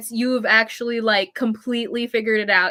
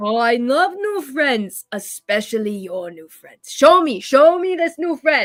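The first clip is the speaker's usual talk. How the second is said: genial, affable, grand, showy delivery. In the game, a character greets the player bringing a new friend, loud booming voice. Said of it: "he's saying it very loudly, booming voice".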